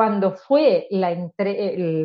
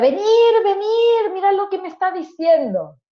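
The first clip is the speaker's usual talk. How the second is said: mock, very high, urgent shouting; 12 semitones higher, 4 dB louder than usual. Retelling how a patient shouted, calling his family over: imitating a man shouting. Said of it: "empieza a gritar y llama a la familia".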